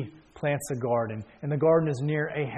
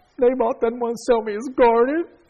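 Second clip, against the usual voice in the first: put-on crying, much higher and louder; 10 semitones higher, 7 dB louder than usual. Retelling how Ahab lay on his bed like a child, imitating Ahab crying. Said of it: "he's crying".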